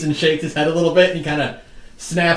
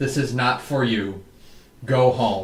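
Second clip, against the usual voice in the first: low, tired, exasperated, worn-out murmur; 5 semitones lower, 6 dB quieter than usual. Voicing a dryad refusing the party passage to the book: worn-out weary dryad. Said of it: "She just looks so worn out by this already".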